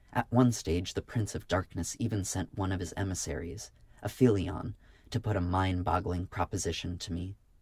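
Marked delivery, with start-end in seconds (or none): none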